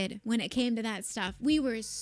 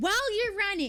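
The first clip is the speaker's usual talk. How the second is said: put-on baffled, furious, high yelling; 9 semitones higher than usual. Retelling how he screamed at the group, imitating a confused, angry scream. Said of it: "he screams at us with the most confused but very angry".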